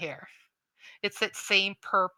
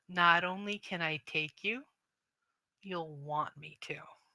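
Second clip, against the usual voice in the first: seductive, menacing, hushed half-whisper; 7 dB quieter than usual. Voicing a villain speaking in a player's head: half-whispering menacingly. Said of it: "And he whispers and goes".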